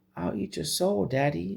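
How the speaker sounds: put-on very high, sweet, creaky, innocent child's voice. Narrator voicing a deadite addressing her daddy, innocent voice. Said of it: "this innocent voice".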